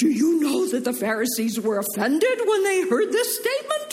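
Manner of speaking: frantic, alarmed, high swooping panic. The speaker retells the disciples coming to Jesus, acting out panicked disciples. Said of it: "Can you hear the panic in their voice?".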